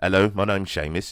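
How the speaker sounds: speaking in a British accent. Introducing the intellectual side of himself, Seamus, in a British accent. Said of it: "That's my British accent".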